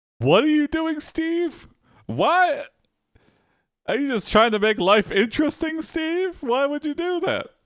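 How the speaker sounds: baffled pleading, very high-pitched.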